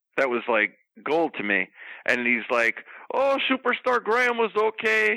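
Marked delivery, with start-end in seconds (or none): 3.1-5.2 bad, very high-pitched voice. Retelling a radio interview answer, doing a bad Bruno impression. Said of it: "That was the worst Bruno ever".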